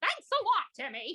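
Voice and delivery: very high, cartoony fairy mom voice. Told their Wanda voice is good, the speaker answers as Wanda, Wanda voice. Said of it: "now I sound like Wanda".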